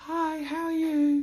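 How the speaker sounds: very high-pitched, slow, unhurried voice. Retelling how the voice sounded right after surgery: imitating own past very high-pitched voice. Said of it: "I sounded very high-pitched".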